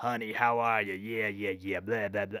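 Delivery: put-on Southern accent. Imitating a chain-smoking waitress at the Waffle House: Southern accent. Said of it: "with a Southern accent".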